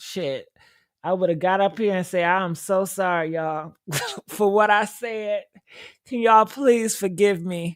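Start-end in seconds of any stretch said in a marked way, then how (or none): 2.2-7.8 put-on groveling, begging, pleading tone. Acting out a pretend public apology to keep a job: mock begging and pleading. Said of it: "I would have been begging and pleading".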